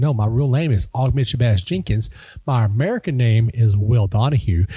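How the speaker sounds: ordinary delivery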